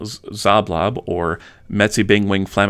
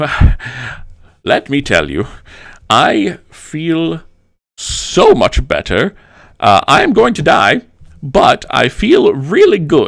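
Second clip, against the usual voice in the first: high, loud, swooping, sing-song animated character voice; 7 semitones higher, 5 dB louder than usual. In a tabletop game, Zoblob turns to the rest of the party; Zoblob character voice. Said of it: "Uh, so he he takes it and uh, / In the book it says that [name] sells trinkets".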